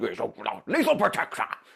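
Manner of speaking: put-on comic-book antihero creature voice. Quoting a movie line, imitating the Venom voice. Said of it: "he's the voice of Venom when he's all".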